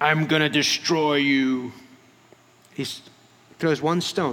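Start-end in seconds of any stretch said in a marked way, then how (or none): 0.0-1.7 slow, big, hulking giant voice. Acting out the giant answering the boy: big giant's voice. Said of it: "And this big giant on the other end".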